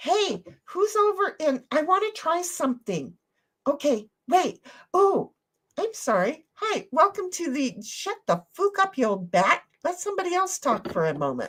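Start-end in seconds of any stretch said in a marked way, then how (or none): 6.5-11.5 fake nasty, mean, put-down tone. Trying something out on the others after saying it: put-on mean voice. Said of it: "I show my mean voice all the time".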